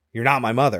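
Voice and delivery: normal talking voice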